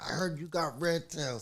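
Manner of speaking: high-pitched, loud, hyped-up energetic voice.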